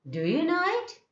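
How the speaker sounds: high rising tone on it, hopeful. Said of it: "always it is rising tone".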